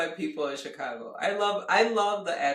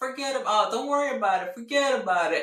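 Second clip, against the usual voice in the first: strong, thick, put-on Chicago accent; 4 semitones higher than usual. Quoting a man with a strong chicago accent, imitating a chicago accent. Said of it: "He's had such a Chicago accent".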